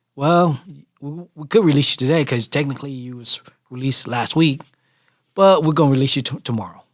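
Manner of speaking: play-acted cold, flat, feelingless matter-of-fact delivery. Retelling what the detention officer said about release: imitating a cold, unfeeling tone. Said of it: "said it with, like, no feelings".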